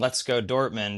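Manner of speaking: normal talking voice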